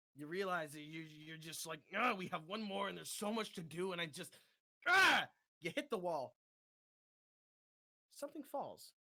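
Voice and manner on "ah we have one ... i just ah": fed-up, overwhelmed, frustrated, boiling-over outburst. Voicing a player's character getting angry: acted frustrated anger. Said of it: "You're getting a little angry".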